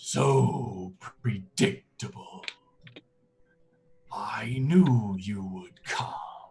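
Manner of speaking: tumultuous, echoing voice as from five mouths. Narrator voices a being greeting the approaching group, echoing many-mouthed voice. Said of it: "tumultuous voice as if it is speaking from five different mouths at once".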